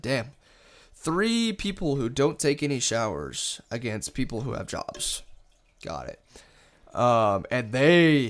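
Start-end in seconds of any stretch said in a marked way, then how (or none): none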